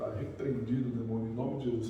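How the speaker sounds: very low, hushed, barely audible half-whisper. Retelling a quiet rebuke of a demon: imitating own past half-whisper. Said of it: "falando baixinho".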